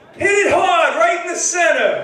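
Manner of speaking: yelled out, high and loud. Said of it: "he yells out".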